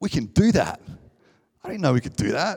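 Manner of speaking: acted, high, animated, worked up, thrilled talk. Telling a story, the speaker imitates a man who was getting excited. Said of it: "And he was getting all excited".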